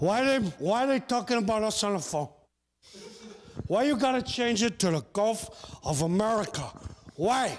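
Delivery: fake Cuban accent laid over speech. Imitating Mexicans asking why it's the Gulf of America: Al Pacino trying to be Cuban. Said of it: "Al Pacino trying to be Cuban".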